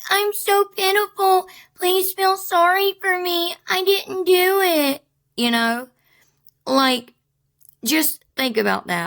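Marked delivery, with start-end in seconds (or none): 0.1-5.0 put-on high, slow, small childlike baby voice. Imitating how she might act, in a little baby voice. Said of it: "the little baby voice of".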